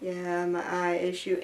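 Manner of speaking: slow, dead level, lifeless put-on monotone. Retelling how an earlier take of the video sounded: imitating own monotone delivery. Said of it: "And I was so monotone".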